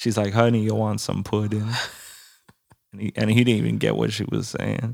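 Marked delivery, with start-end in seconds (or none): 0.3-1.7 imitated Jamaican accent. Retelling what the lady behind the counter said: imitating a jamaican accent. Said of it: "she had the, the Jamaican accent".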